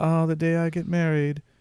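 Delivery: put-on soft, wistful, dreamy young woman, British accent. Playing a young single woman fantasizing about her wedding: Teriyaki Mary voice. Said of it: "She has a British accent".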